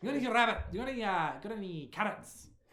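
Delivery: put-on Scottish-accented voice. Voicing the rabbit friend asking for carrots: scottish accent. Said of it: "It was Scottish".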